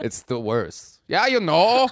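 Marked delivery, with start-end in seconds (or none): 1.1-1.9 put-on, high-pitched Wisconsin accent. Showing a Wisconsin accent: Wisconsin accent. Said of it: "I can't even do a Wisconsin accent".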